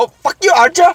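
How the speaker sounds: put-on Vietnamese accent, very high-pitched. Imagining a face-swapped villain cursing at archer: put-on vietnamese accent. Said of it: "he's got, like, a Vietnamese accent".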